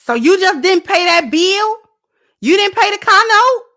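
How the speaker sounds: very high, very loud accusatory tone. Illustrating what an accusatory tone sounds like: accusatory tone. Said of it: "What's an accusatory tone?".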